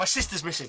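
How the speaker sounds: genuinely angry outburst. Playing Edward, who smacks the table when asked about his side quest: angry. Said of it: "angrily, Edward smacks the table and goes".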